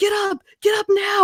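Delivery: shrieked, very high-pitched screaming. Recounting what she screamed at the speaker on a hill: retelling a scream. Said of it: "And she's like".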